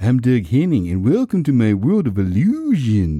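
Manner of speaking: hippy-dippy magician-style patter, swooping sing-song lilt. Imitating how a hippy-dippy 1970s illusionist talked: Doug Henning impression. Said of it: "And he talked like this".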